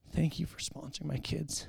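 mock tearful, breathy, crying voice. Retelling a woman's thanks at the Hope House: imitating a woman crying. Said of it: "and she starts crying".

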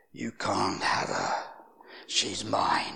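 rough, swooping, deep, creaky possessed voice. Praying over a woman, the speaker imitates the voice that came out of her. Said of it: "this voice comes out of her".

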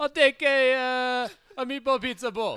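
Italian-American accent. Acting out ordering the dish as stereotypically as possible: mock Italian-American accent. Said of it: "As racist as possible".

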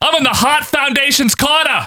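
put-on heavy, laid-on New England accent, very high. Imitating an insert promo from Danny Davis: Danny Davis New England accent. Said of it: "with his big New England accent".

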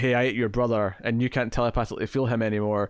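ordinary talk

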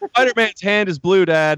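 put-on child voice, loud. Retelling a three-year-old coloring in church: imitating Leo loudly announcing. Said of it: "he was gonna loudly announce".

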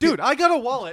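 loud shouting, voice very high. Cutting in during a talk about carrying wallets: yelling. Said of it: "you don't have to yell".

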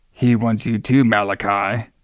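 weird put-on demon voice. Retelling a character's line to Malachi, in a weird demon voice. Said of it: "now he has this weird like demon voice".

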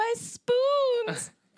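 put-on very high screaming with an Irish accent. Describing a funny clip, speaker imitates a woman screaming; imitating her screaming. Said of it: "She's just screaming".

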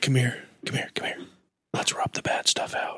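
soft, menacing, sinister whisper. Improvising a scene of getting the evil out, soft and sinister. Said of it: "kind of soft and sinister and say".

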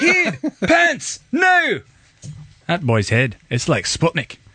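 put-on Scottish accent, high-pitched and slow. Quoting the dad Stuart from So I Married an Axe Murderer, Scottish accent impression. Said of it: "That's a pretty good Scottish you got down there".

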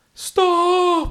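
sharp, very high, loud, panicked scream.

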